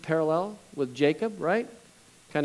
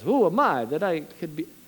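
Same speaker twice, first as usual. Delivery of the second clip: slipped into Italian-sounding accent. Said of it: "I think I went Italian there".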